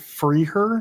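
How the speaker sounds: ordinary talk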